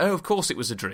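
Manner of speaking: ordinary talk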